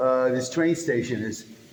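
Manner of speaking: loud, sarcastic delivery.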